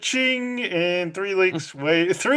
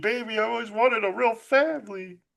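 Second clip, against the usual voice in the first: put-on whiny, needy tone; 4 semitones higher than usual. Retelling a movie scene, acting out a character's line: imitating a whiny voice. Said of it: "she gets all whiny".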